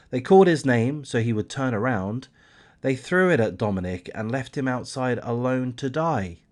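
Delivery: plain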